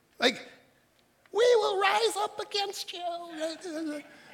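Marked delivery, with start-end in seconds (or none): 1.4-4.1 very high, slow, stretched tiny ant voice. Comparing it to ants rebelling against humans, the speaker does an ant impersonation. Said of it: "That's my ant impersonation".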